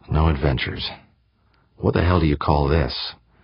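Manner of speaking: ordinary delivery, nothing marked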